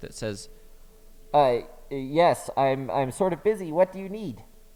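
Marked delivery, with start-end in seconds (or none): 1.3-4.4 raised, crackling voice as if through a loudspeaker. Narrator voicing an unseen someone answering the friends, crackly loudspeaker voice. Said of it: "you hear the crackly voice of someone, sounds sort of like they're coming from a loudspeaker".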